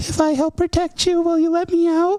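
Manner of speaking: small voice. A game narrator voices something speaking to the players from a lantern, in a small voice. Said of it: "you hear this small voice that says".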